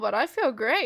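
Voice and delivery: ordinary talk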